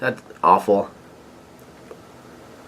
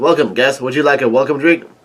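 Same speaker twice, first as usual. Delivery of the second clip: ordinary talk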